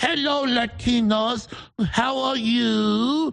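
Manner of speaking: condescending, high and very slow, "you" stretched out. Describing a speech where AOC greets different groups: imitating AOC's changed voice. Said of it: "changes her voice four times".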